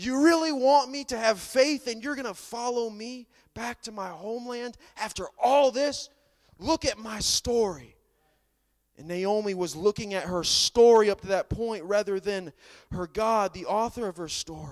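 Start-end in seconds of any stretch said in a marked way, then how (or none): 0.0-7.9 put-on sarcastic, cynical voice. Acting out Naomi losing hope: mock sarcastic, cynical Naomi voice. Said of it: "sarcastic, cynical".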